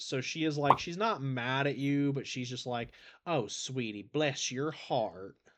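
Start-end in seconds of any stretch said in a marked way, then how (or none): 3.3-5.3 sugary, sweet Southern mama voice. Describing B's personality and acting out how she talks: imitating B, sweet Southern mom. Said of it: "B is the type of person who's just very much like sweet Southern mom".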